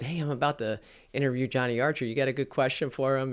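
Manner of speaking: ordinary talk, nothing marked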